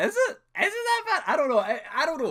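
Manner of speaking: high, very loud, squeaky tone of disbelief.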